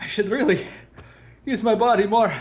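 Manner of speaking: out of breath. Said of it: "I'm a little out of shape".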